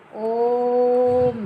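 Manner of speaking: ओम with the o held long. Explaining a vowel held three units long, drawn-out o in ओम. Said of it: "इस ओ को हम बोलेंगे तो तीन के बराबर बोलेंगे।".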